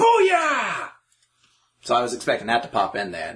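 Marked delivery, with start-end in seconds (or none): 0.0-0.9 play-acted battle cry, pitched very high. Retelling the character's catchphrase when he attacked: imitating a catchphrase shout. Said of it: "he was like".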